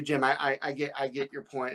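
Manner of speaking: ordinary talk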